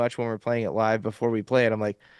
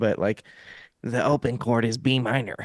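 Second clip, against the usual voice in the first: put-on nerdy voice, slower. Explaining the chords of a guitar tuning, in a guitar-nerd voice. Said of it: "in the guitar nerdy voice".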